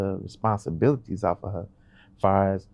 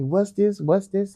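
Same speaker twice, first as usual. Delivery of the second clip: put-on childlike kid voice, repetitive; 12 semitones higher, 3 dB louder than usual. Retelling what the kids keep asking: imitating the kids. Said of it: "they keep asking me".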